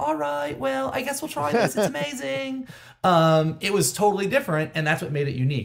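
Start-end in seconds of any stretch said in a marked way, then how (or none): 0.0-2.7 cute, sweet cartoon hippo voice, high and creaky. Describing the hippo character's unusual voice: imitating an adorable hippo voice.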